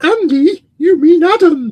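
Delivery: very high, very loud, drawn-out commentator voice. Reading out a commenter's message aloud: imitating Tiffany's voice. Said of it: "You like doing Tiff's voice now".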